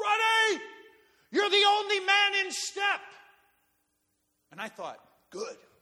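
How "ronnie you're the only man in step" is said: put-on very high, drawn-out sergeant yell. Recalling learning to march when a sergeant yelled at him, imitating Chief Argo yelling. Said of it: "yelled at me".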